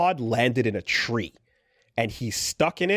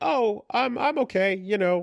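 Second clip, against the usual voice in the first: cute robot voice, much higher pitch; 9 semitones higher than usual. Retelling how Levi answers after being kicked, cute Levi robot voice. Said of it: "Levi has like the cutest voice".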